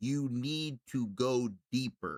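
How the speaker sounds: drawn way out, stiff and unnatural. Imitating how the diver talked: stilted, unnatural delivery. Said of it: "that's how he would talk".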